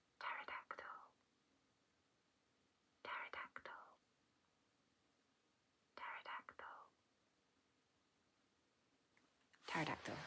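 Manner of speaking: breathy, hushed whisper, said repeatedly. Testing the listener's hearing by whispering words from further back: whispering. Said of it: "I'm just gonna whisper some words".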